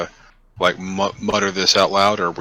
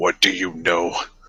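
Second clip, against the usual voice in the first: put-on voice, mumbled under breath. Playing a character who glares at a companion, mumbling in character. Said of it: "frozen look and just glare at you for a second and just mumble".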